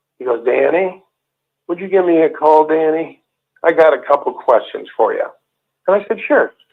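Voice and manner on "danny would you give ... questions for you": play-acted dazed, vacant, lifeless, barely-there voice. Retelling a phone call, the speaker imitates Neil sounding dazed. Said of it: "And he sounded like this".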